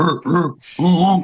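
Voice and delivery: grunting, monster-like gorilla noises. Speaker recounting a man in a monster mask entering their booth, imitating gorilla noises. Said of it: "making gorilla, gorilla noises at me".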